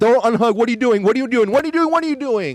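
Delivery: high, rising, repeated yelling that keeps building. Gamer reenacts screaming at teammates who couldn't hear him, retelling own screaming. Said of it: "but you're screaming at the fucking".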